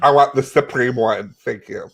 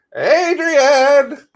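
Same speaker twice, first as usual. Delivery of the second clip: very high holler with wide pitch swings; 13 semitones higher, 3 dB louder than usual. Acting out a favorite movie line: Sylvester Stallone as Rocky yelling. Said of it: "wanna hear my favorite line?".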